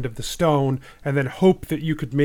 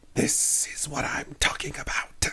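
sneaky, hushed, whispered aside; 8 dB quieter than usual. Game narrator voices a character who sneaks up beside a player and whispers. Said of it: "he sort of turns to you and he whispers".

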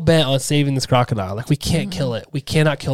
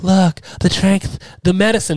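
put-on woman's voice, higher; 5 semitones higher than usual. Retelling what the woman in the movie says, imitating her speech. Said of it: "this is my, my her".

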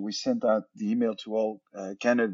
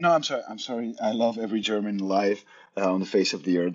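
plain

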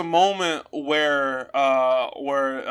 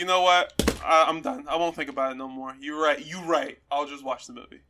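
normal talking voice

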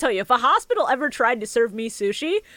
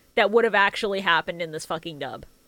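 normal talking voice

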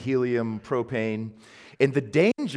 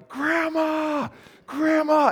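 acted, shrill, very high-pitched calling yell. Recalling being locked in a room after grandma fell, reenacting yelling for grandma. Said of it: "I start yelling".

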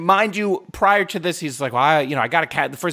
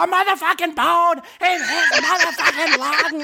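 put-on shrill screaming, pitched very high. Retelling screaming at home after a text about lung cancer, retelling a scream. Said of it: "And I'm screaming".

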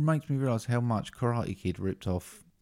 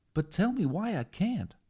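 put-on high-pitched American man voice, higher; 11 semitones higher than usual. Acting out the scene where Yoda trains Luke: Luke Skywalker voice. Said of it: "High-pitched American man".

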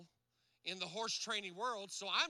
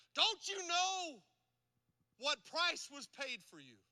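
high, furious, angry screaming; 7 semitones higher than usual. Recounting screaming at a horse bought with all one's savings, retelling a scream. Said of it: "So I screamed at her".

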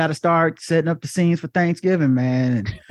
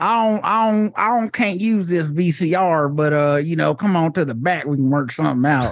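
put-on, imitated Southern accent. Retelling the pawn shop owner's lines in a southern accent. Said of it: "he has a Southern accent for some reason".

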